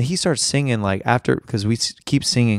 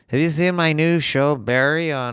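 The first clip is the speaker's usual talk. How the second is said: rough, put-on voice; 4 semitones higher than usual. Working on impressions: Bill Hader impression. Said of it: "I'm gonna work on Bill Hader".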